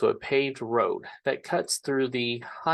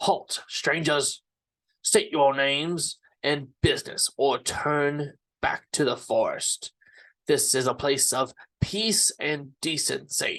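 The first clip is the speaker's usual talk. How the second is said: stern, barking tone. A man calls down from a village gate tower at approaching strangers, stern barking man's voice. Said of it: "the stern voice of a man barking at you".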